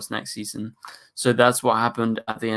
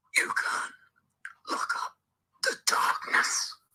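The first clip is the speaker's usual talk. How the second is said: bad, breathy, hushed whispering voice. Doing what a viewer asked for in the chat: a bad Zoom impression. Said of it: "really bad impression".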